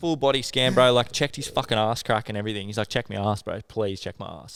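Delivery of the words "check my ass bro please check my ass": mock panicked, freaking-out voice. Retelling someone begging to be checked for leeches: imitating someone freaking out. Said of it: "he was freaking out".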